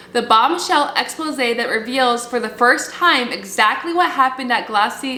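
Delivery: normal talking voice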